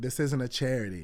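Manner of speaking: normal talking voice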